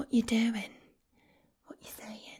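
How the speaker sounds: English Essex accent. Showing how to say a line: Essex accent. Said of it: "the Essex accent".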